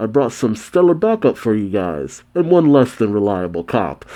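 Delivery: normal talking voice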